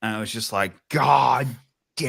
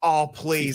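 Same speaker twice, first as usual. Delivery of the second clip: put-on scream, higher pitch; 5 semitones higher than usual. Retelling screaming at the tv as a player kept falling: imitating own screaming. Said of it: "I was screaming".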